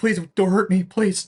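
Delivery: timid, skittish, frightened pleading voice. Acting out a skinny, abused character curled up in fetal position: imitating scared pleading. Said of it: "he's very, like, skittish".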